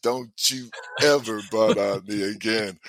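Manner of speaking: ordinary delivery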